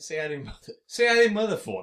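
loud put-on Boston accent, drifting off. Trying out an impression of an actor: attempted Boston accent. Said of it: "I'm trying to do Boston".

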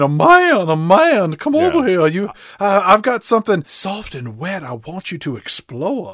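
lazy, drawn-out calling out. Recapping a beach scene, Audrey calls to a newly landed man, retelling Audrey screaming. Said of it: "she just starts screaming".

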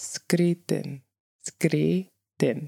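slowed-down pronunciation. Speaker repeating a word to demonstrate its pronunciation, said slower. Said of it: "So I'll say it slower".

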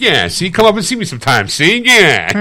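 put-on 1940s old Hollywood movie voice. Describing a movie teacher who talks like the 1940s, in a 1940s old-movie voice. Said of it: "talks like she's completely in the 40s".

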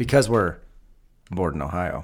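loud "because", dramatic pause, then "bored in Ohio".

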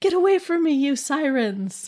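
put-on high, loud, yelling child voice.

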